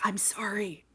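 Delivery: very quiet, soft, hushed whisper. Reading a story aloud, a character whispers to a dropped cinnamon roll. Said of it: "Melt whispers".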